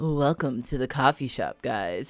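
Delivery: suave, smooth, cool delivery in low voice. Wishing for a voice changer, the speaker attempts a smooth cool voice. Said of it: "this man sa- sounds smooth and cool".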